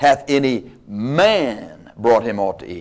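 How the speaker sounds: heavy stress on the word man. Reading a Bible verse aloud to show emphasis, stress on man. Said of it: "Notice the emphasis on the word man".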